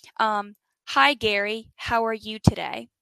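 put-on robotic computer voice. Retelling what a mystery voice said to him: robotic TomTom GPS voice. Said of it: "the kind you picture when you think about a computer talking".

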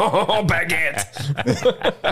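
squeaky voice, stretched out. Co-host doing a French voice for the show's listeners: French Muppet voice. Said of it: "like a French Muppet".

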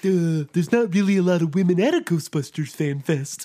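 moose-like cartoon voice. Retelling what they would have said to the guys at the fan fest: Bullwinkle impression. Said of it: "That's my Bullwinkle impression".

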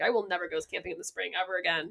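ordinary delivery

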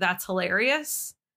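slow, cold, sarcastic drawl.

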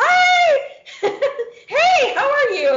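big exaggerated fake tone. Retelling a reply to a match's first message: big fake hi. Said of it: "Like that big fake, like, "Hi."".

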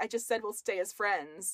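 ordinary talk

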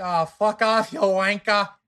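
loud, high mock British accent. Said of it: "British accents, go".

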